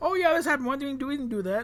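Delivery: high, loud, mocking voice of sudden mock realization.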